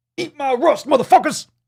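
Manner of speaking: loud, very high boastful voice. Speaker heading into their fifties calls back to younger people behind them; Mr. T voice. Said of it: "in my best Mr. T voice".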